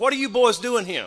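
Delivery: put-on bad Georgia old-lady accent. Retelling what an eighty-year-old lady asked the boys, in a bad Georgia accent. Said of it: "I don't do a very good uh, Georgia accent".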